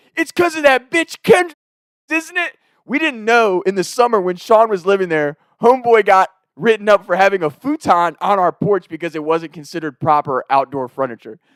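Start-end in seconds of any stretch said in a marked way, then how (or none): 0.1-2.5 mock very high screeching screaming rant. Retelling how a roommate came out and yelled at the cop: imitating someone screaming. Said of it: "screaming at the cop".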